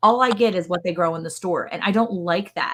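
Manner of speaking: ordinary talk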